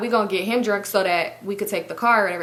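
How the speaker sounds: plain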